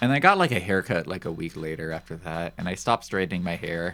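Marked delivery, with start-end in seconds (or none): none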